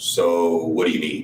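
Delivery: low, dropped, slow, deliberate voice. Speaker retells making things a little awkward with people, in a dropped voice. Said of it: "And then I would drop my voice and go".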